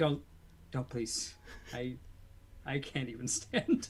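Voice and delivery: very quiet, barely above a murmur. Pleading in character with someone about to leave: speaking very quietly. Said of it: "I say very quietly".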